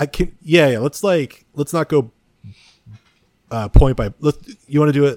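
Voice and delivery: tripping over words, restarting. Planning with the other speaker how to go through the notes: stuttering a lot. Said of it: "I'm, like, stuttering so much".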